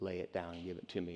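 half-whispered, soft, hushed, barely audible. Voicing God asking the listener to lay it down: half-whispering. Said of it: "God comes and whispers".

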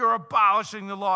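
over-the-top, rowdy, boisterous bellow, very loud. Retelling how one rabbi answered another's interpretation: imitating a boisterous, over-the-top retort. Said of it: "it was just a boisterous, over the top".

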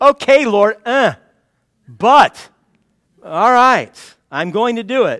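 slow, swooping, grudging, unenthusiastic reluctant tone. Acting out Peter agreeing to obey: imitating reluctant Peter. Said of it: "He's not overflowing with enthusiasm".

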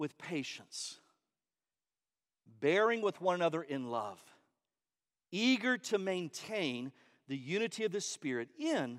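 painfully slow, very soft, low, hushed voice. Reading a text passage aloud to listeners, reading very slowly. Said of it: "It's so painful to read this slow".

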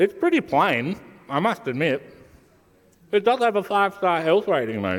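words mushed by a mouthful. Speaker trying a wheat snack while recording a message to mum, talking while chewing. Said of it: "i'm still chewing".

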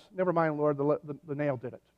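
ordinary talk, nothing marked

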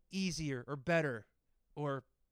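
ordinary delivery

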